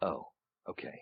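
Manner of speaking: calm villain voice, hushed and breathy. Actor showing how a bad guy reacts compared with a hero, calm villain voice. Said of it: "bad guys can be really powerful and very calm".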